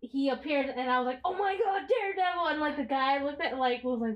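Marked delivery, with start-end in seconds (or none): 1.2-2.5 acted high-pitched, excited screaming outburst. Retelling watching the show when a character appeared: retelling an excited scream. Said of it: "you and I screamed it".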